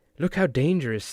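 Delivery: grave, solemn, overly serious newsreader delivery. Mocking how the news sounds, imitating a woman reporter: mock-serious news reporter voice. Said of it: "they're so serious".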